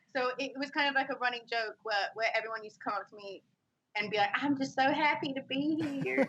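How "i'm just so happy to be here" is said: very slow, high, drawn-out Southern belle drawl. Recalling a running joke everyone would say to her, in a put-on Southern belle accent. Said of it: "because of my southern".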